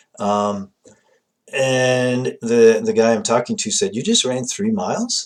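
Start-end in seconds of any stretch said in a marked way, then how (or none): 4.0-5.3 mildly surprised, slightly caught off guard tone. Retelling a phone call, the speaker quotes the man on the line, mock-surprised. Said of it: "He sounded a little bit surprised".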